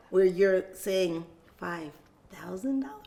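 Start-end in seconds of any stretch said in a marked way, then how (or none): 1.6-2.8 softly spoken, much quieter. Coaching listeners on saying amounts out loud, demonstrating the number quietly.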